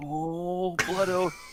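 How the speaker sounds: weak, feeble delivery. Playing a character who weakly scolds the Blood Oath: weakly, in character. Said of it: "just weakly".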